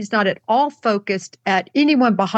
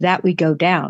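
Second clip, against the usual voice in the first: very quiet delivery in a much lower voice; 5 semitones lower than usual. Retelling a woman's exact words for everyone listening, very quietly. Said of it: "very quietly she says".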